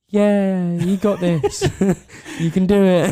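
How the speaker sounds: mock deadpan, flat, slow, unenthusiastic, sarcastic tone. Imitating another speaker's offhand encouragement during a birth: imitating a flat sarcastic tone. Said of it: "you literally said it like that as well".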